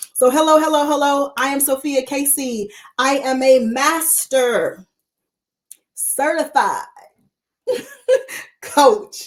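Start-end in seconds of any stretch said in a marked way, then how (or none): 3.6-9.3 slow, deliberate, each word weighted in "master certified coach". Introducing herself and her coaching credential: slow on master certified coach. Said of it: "I slow down on purpose when I say master certified coach".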